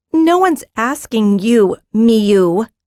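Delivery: slow, snarled delivery. Narrator reads Japara snarling back at Miu. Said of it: "Japara snarled back".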